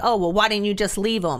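mock-condescending, put-on patronizing tone. Retelling how the police talk down to a domestic violence victim, mock-condescending. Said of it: "they're in there like condescendingly".

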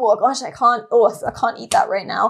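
normal talking voice

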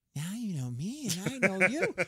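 high mock creepy stranger voice, laughing. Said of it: "I went".

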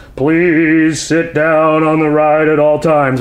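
slow, spooky, ghostly announcer voice over loudspeakers. Retelling what the guy over the ride's loudspeaker says, in a ghostly voice. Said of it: "a ghostly voice goes".

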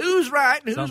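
very high-pitched put-on North Carolina accent. Urged by another speaker to try the voice, he uses a north carolina accent. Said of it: "Throw some of that North Carolina".

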